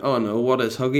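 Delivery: ordinary delivery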